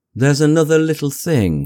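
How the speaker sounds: hesitant, halting. A neighbor raises one more matter with the narrator: uncertain, hesitant. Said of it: "he said uncertainly, and hesitated".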